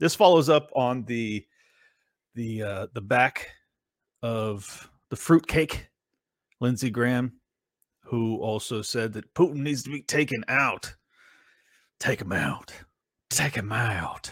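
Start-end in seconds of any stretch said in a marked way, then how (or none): 12.0-14.3 put-on southern belle voice. Imitate Lindsey Graham speaking about Putin, doing Lindsey Graham as a Southern belle. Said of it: "do a Southern Belle impersonation when I do Lindsey Graham".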